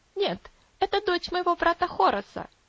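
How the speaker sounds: high, scornful, contemptuous, dismissive tone. Answering an elderly gentleman's question about a crying girl, contemptuous. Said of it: "презрительно ответила Энна".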